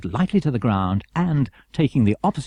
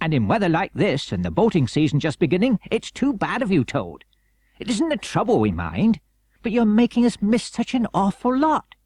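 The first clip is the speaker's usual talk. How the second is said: friendly, hearty chiding tone with raised pitch; 7 semitones higher than usual. Narrator reads the Rat speaking to Toad, hearty. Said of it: "said the Rat heartily".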